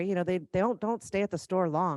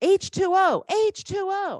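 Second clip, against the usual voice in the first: very high, very slow, shrill, loud, drawn-out grandma scream; 13 semitones higher, 6 dB louder than usual. Retelling how grandma screamed at a customer on the phone: imitating grandma screaming. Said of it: "she started screaming at this lady".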